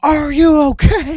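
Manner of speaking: play-acted, very high-pitched, loud screaming. Retelling a firefighter calling across the gap between highways: imitating someone screaming. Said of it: "He's screaming at me, going".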